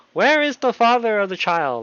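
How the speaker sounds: high swooping half-shout. Narrating a story, voicing Doc's question to the parents, half-shouting. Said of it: "Doc kind of shouts".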